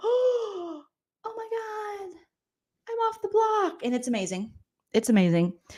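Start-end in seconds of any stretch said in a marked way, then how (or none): 0.0-3.8 very high, tearful happy crying, drawn-out "oh". Retelling Angela's reaction to coming off the block: imitating happy crying. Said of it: "So Angela's so happy. She's crying".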